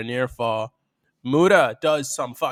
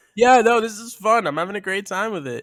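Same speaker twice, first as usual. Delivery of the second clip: forced, insincere fake cheer, pitched up; 7 semitones higher than usual. Commentating on a wrestling match, sounding insincere, like lying about a party. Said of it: "sounded like somebody who's lying about a party".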